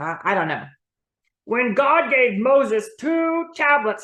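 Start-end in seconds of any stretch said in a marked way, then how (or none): 1.4-4.0 put-on joke-telling puppet character voice. A puppet delivering a joke's punchline, in a joke-telling puppet voice. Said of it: "Hi, I'm [name], like the sauce".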